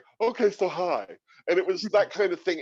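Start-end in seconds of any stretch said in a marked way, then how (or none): 0.2-1.1 high, lifted, put-on character voice. Recalling the voice first found when starting the role of Wilma: Wilma character voice. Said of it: "there was this voice like".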